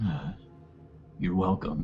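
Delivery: soft, hushed, barely voiced whisper under breath. Walking on in the dark and speaking under the breath: whispered, hushed tone. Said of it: "in a whispered, hushed tone, like, under my, my breath".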